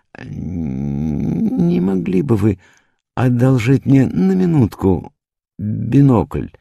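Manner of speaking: very high-pitched, faltering, hesitant, unsure delivery. Narrator reading a story character's line, said hesitantly. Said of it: "нерешительно произнес".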